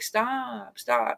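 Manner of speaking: put-on faint woman's voice. Quoting the woman who tells the name-callers to stop, in a faint female voice. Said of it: "it's like a real faint female voice".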